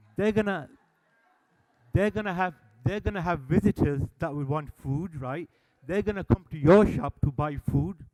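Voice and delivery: loud, heated retort.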